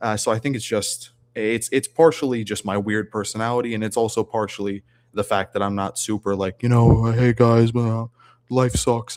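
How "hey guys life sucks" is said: slow, gloomy put-on voice. Imitating the gloomy doomers the speaker says they differ from: imitating a doomer. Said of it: "one of those doomers".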